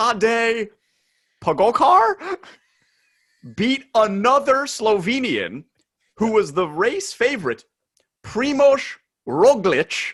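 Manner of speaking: high put-on Slovenian accent, consonants worked hard. Speaker recounting a Tour stage, saying riders' names with a put-on accent on Slovenian names. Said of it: "What accent are you trying to use?".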